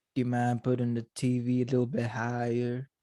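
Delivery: put-on south Georgia southern US accent. Showing how their accent changes while watching wrestling, South Georgian accent. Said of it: "Like that".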